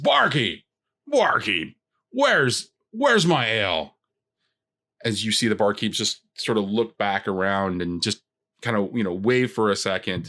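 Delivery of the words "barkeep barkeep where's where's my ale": brash, loud, swooping raptor bellow. Voicing a raptor who walks up to the bar: loud raptor bellowing. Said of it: "a loud sort of, uh, raptor kind of walks up to the bar and says".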